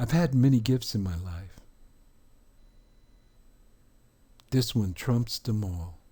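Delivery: tearful voice, choked with tears. Thanking listeners for a gift that means a lot, tearing up. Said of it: "I'm tearing up again".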